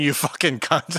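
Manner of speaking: plain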